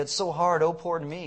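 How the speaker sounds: usual speaking voice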